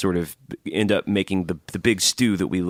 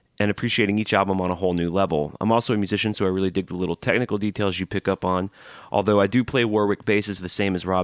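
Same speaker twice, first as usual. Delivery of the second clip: ordinary delivery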